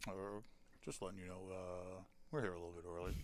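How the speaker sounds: very soft, low, hushed pilot announcer voice. Retelling what the pilot said on the radio: imitating a pilot's radio announcement. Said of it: "that pilot's like".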